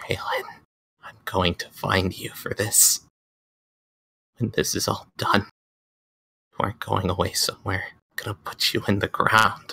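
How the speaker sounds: muttering under breath. Voicing Freya, who is upset and muttering under her breath: muttering under her breath. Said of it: "you could hear her under her breath a bit".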